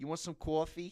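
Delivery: put-on very high old woman voice, New Jersey accent. Describing their grandmother, the speaker does an impression: imitating Mayma's Jersey accent. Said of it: "we're from Jersey".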